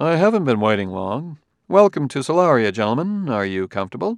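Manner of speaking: amiable, cordial, pleasant and friendly voice. Narrator reads a character welcoming two visitors, pleasant, friendly voice. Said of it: "Gruer spoke in a pleasant, friendly voice".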